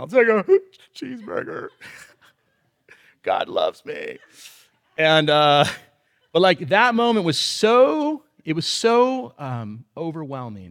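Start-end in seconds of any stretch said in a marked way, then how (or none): 1.0-4.2 play-acted, tearful whisper through sobs. Telling of being taken out for hamburgers while crying, retelling ordering while sobbing. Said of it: "I'm trying to order a hamburger while I'm sobbing".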